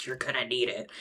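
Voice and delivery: imitated under-breath mutter. Retelling a cocky guy's remark after addressing the group, under his breath. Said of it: "under his breath is like".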